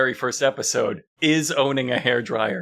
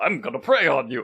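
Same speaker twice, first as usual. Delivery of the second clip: theatrical vampire count voice. Retelling how a man on TV answered a question, in a Dracula voice. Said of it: "he does a Dracula voice".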